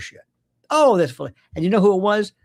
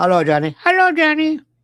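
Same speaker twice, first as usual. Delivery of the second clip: very high, squeaky little hand-puppet voice; 10 semitones higher than usual. Retelling how a ventriloquist voiced his hand puppet: imitating Senor Wences. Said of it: "and he goes".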